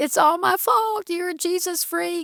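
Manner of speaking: put-on high, tearful crying, words through tears. Retelling mom's confession in the bedroom: imitating mom crying. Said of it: "then she cried and said".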